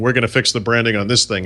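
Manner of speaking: normal talking voice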